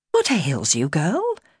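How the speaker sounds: worried, anxious, yet kind tone. Narrator reads a woman addressing a girl who jumped up: anxious and kind. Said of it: "anxiously, kindly".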